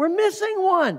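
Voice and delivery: mock, piercing, very high shrill child-like scream. Retelling a kid screaming as the car leaves the rest stop, retelling a kid's scream. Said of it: "one of the kids starts screaming".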